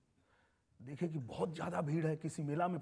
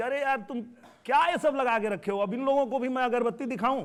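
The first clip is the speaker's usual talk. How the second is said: loud, high-pitched scolding. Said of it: "वो बहुत डांटते थे कि".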